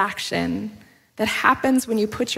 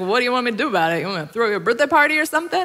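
cutting, jabbing sarcastic retort. Retelling one woman's reply to her friend in a diner: imitating a sarcastic jab. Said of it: "sarcastically kinda jabbed back and was like".

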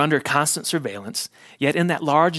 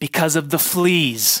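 mock-triumphant tone, slower. Recounting Betsy's answer to her own question, retelling a triumphant reply. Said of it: "Betsy could not keep the triumph from her voice".

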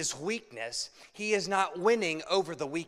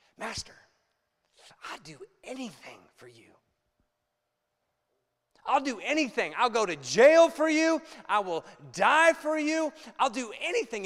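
fervent, heartfelt, passionate voice climbing in pitch; 5 semitones higher, 4 dB louder than usual. Retelling Peter's vow to his master, imitating Peter's passion. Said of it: "you can hear the passion".

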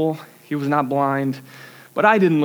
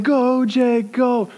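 mock yelling, much higher, slower; 8 semitones higher than usual. Recounting his kids' soccer game, voicing his dad cheering him on; retelling dad's yell. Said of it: "he's yelling".

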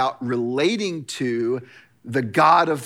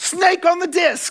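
shrieking-high, very high, drawn-out yell; 4 dB louder than usual. Retelling how a guy yelled just before a disc throw: imitating someone yelling. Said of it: "he yells out".

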